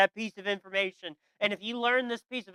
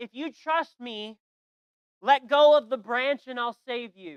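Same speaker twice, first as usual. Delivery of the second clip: put-on shout, called down from above; 3 semitones higher, 4 dB louder than usual. Telling a story, the voice above answers the man on the branch: shouting down. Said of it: "he shouts down".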